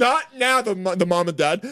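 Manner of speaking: firm scolding, high and loud.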